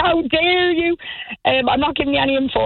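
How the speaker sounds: put-on heavy, high Irish accent. Retelling a phone call with a barman who refused to help: imitating a strong Irish accent. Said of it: "he's got a worse accent than the Cork accent".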